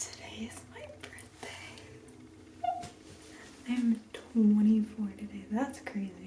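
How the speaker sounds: soft, very quiet whispered chatter. A vlogger greets her channel while her roommate is still sleeping, whispering. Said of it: "I'm kind of whispering".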